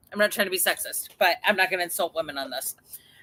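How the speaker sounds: plain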